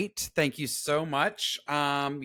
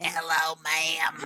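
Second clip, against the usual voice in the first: put-on froggy, hoarse, croaky child voice. Teasing the other speaker's frog in the throat, the speaker does a Little Rascals kid voice. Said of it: "You sounded like the kid from the Little Rascals".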